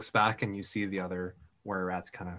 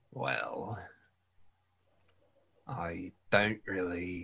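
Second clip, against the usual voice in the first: put-on London Cockney accent; 4 dB quieter than usual. Retelling what Winton said when he spoke up, in a Cockney accent. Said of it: "going Cockney for a second".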